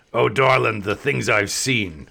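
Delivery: imitated smoker's voice. Retelling a woman's reply when asked to card them, imitating a smoker's voice. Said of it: "it sounded like she'd smoked".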